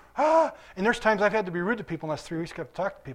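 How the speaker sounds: rushed, fast talk, rattled off. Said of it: "and I'm talking fast".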